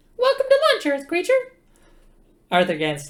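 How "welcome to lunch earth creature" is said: very high, very loud, shrill mouse squeak. An unseen speaker addresses the Earth guest, in a small voice. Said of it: "A small voice said".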